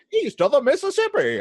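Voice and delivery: put-on high-pitched old-timey prospector voice. Speaker decides the phrase should be said in an old-timey prospector voice. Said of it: "I should say it in like that old timey prospector voice".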